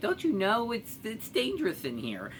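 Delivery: small, cutesy voice, high, soft and sing-song. Retelling what Tuffy says once he turns into his cute little voice. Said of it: "he turns into his cute little voice".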